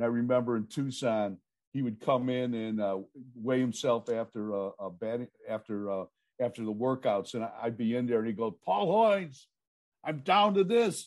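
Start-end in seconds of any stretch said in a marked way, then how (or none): 8.5-11.0 loud, high-pitched yell carrying across a room. Retelling how a player called out his weight after workouts: imitating Carlos Baerga yelling. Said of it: "so he'd be yelling at me".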